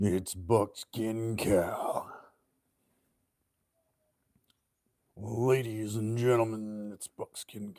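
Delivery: put-on whiskey-soaked voice. Introducing himself to the ladies and gentlemen as Buckskin Cal, whiskey-soaked voice. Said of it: "I can have that whiskey soaked voice".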